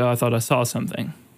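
mock-apologetic, imitated apologetic tone. Retelling how a teacher came back to the lesson, imitating an apologetic tone. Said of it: "come back and apologize".

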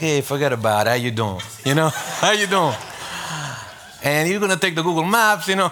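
put-on Italian-American wiseguy accent. Giving directions to a lost man, the speaker channels his inner Italian: mock Italian-American accent. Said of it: "I channeled my inner Italian and I'm like".

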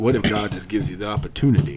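put-on narrator voice. Quoting a line about patience in best Morgan Freeman voice. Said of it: "That's my best Morgan Freeman voice".

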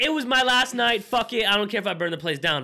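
plain

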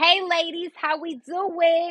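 exaggerated New Jersey accent, very high and drawn out. Before a panel in jersey, the speaker shows how they'll greet the crowd: put-on jersey accent. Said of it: "I'm gonna talk like that".

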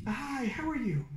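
slow, easy, drawn-out nice-guy voice. Describing a deadlifter who is nice in real life: Eli's nice guy voice. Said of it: "you know that nice guy voice?".

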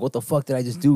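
mock sudden panic, horrified, panicked outburst. Retelling a movie scene where a character panics after a killing: imitating a panicked character. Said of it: "he starts, like, pa-, panicking".

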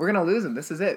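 bright, oddly happy, cheerful, upbeat tone. Announcing that a mutual friend will be lost, sounding happy. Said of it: "I don't know why I sounded so happy".

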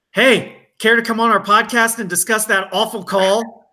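high, heckling yell, calling out. Showing how to heckle an umpire after a bad call: pretend yelling at an umpire. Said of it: "I'll just yell".

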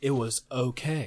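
put-on monotone narrator voice. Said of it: "It's so monotone".

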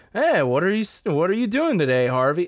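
put-on enthusiastic voice. Showing how Bruce Wayne talks in the series, greet Harvey in a higher, enthusiastic Bruce Wayne voice. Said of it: "he made his Bruce voice higher and more like enthusiastic".

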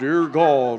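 dropped prayer voice. Saying grace over food in King James style: lowered voice. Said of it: "Don't we drop our voice and go to King James?".

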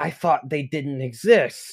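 hushed whisper under the breath. Voicing townspeople staring at a turtle in the street: whispering. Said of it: "you hear them whisper things like".

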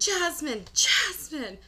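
mock yelling, very high and loud. Telling how their water broke and they tried waking jasmine: retelling a yell. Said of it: "And I'm, like, yelling".

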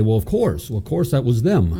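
ordinary delivery

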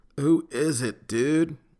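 drowsy, groggy, half-stoned voice. A voice answering over the intercom: groggy and half-stoned. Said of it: "groggy and half-stoned".

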